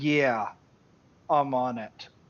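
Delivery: put-on sarcastic tone, very slow and drawn-out. A man glances back and forth between you and her, then answers; retelling a sarcastic reply. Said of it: "In a sarcastic way".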